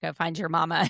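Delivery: ordinary talk, nothing marked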